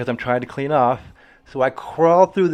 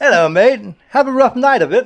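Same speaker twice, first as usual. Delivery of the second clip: very high, loud, put-on English accent; 10 semitones higher, 6 dB louder than usual. Retelling what a hotel worker said on arrival: imitating an English accent. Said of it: "this freaking English dude".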